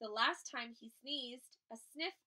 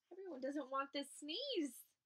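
ordinary delivery

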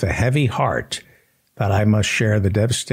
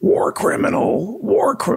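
very high-pitched, accusing scream, each word jabbed. Act out an activist interrupting a man as he testifies, imitating someone screaming in a face. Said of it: "just screaming in his face".

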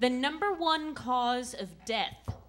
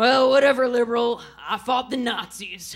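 put-on very loud, drunk-sounding old grandpa voice; 11 dB louder than usual. Retelling what grandpa says at a matinee: imitating grandpa. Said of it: "And be like".

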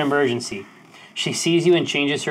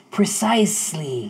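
hissing single word; 3 semitones higher than usual. Narrating a character's reply to the off-worlders, hissing. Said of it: "he hisses".

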